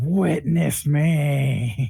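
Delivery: high, ragged scream with the last word, me, drawn out. Player's character in a hallway, using thaumaturgy, screaming. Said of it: "I scream".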